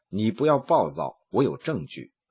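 normal talking voice

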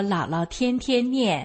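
ordinary talk

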